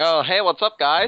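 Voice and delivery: exaggerated American accent. Asked for an actual voice, pretending to switch off a voice changer, exaggerated american accent. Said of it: "I'm American, really. I'll just put this accent on".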